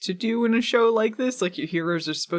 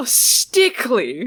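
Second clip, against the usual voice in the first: mocking, taunting tone, pitched higher and louder; 5 semitones higher, 5 dB louder than usual. Retelling how Phoebe repeats a word: imitating a mocking repeat. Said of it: "which Phoebe repeats mockingly".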